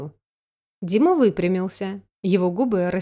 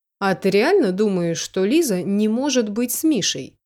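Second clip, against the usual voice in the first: plain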